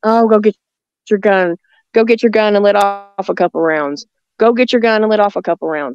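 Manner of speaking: ordinary delivery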